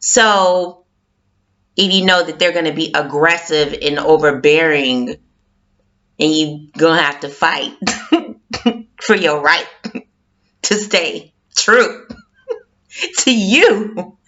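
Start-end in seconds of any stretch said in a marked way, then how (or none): 6.2-14.0 talking through laughter. Giving advice on staying true to yourself, laughing while talking. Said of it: "I'm laughing because".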